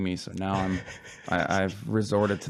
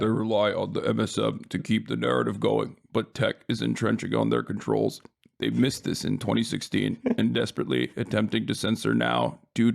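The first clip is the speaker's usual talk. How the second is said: put-on, creaky, robotic voice; 2 semitones higher than usual. Reading a passage aloud, trying to do a robot voice. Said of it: "I was going to try to do like a robot voice, like".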